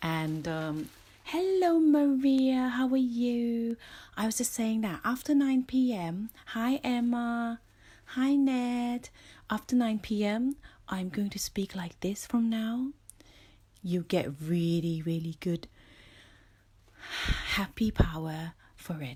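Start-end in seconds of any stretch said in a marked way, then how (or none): 9.5-12.9 calm, easy, relaxed, minimal-effort voice. Speaker greeting people by name shows a new evening voice: relaxed, low-energy. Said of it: "hard to be relaxed and use less energy".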